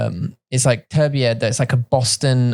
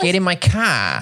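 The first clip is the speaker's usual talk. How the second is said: Boston accent, pitched up; 5 semitones higher than usual. Explaining how Bostonians say a word, demonstrating a Boston accent. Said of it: "in Boston say car".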